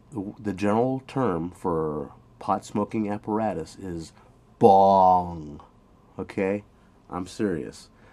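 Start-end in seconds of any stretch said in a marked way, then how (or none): 4.6-5.6 bong with pitch sliding down, falling tone. Teaching the tone of the word bong, falling tone on bong. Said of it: "It's a falling tone".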